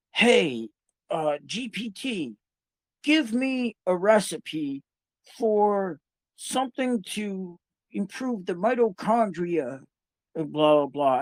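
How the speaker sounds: very slow, word-by-word, drawn-out, high-pitched yelling. Speaker imitates someone they work with using voice-to-text; imitating someone yelling at voice-to-text. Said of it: "So he's constantly yelling".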